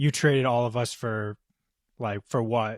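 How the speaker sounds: normal talking voice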